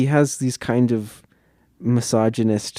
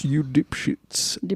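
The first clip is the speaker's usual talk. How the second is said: put-on British-sounding voice, higher and quieter; 3 semitones higher, 5 dB quieter than usual. Joking about how the film's director would insult viewers: Alfred Hitchcock voice. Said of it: "probably how Hitchcock would say that".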